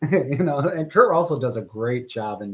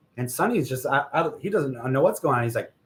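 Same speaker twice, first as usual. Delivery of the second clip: ordinary delivery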